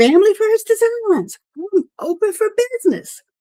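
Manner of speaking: put-on, very high scream. Retelling screaming a business's name outside at night: imitating own past scream. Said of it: "I screamed".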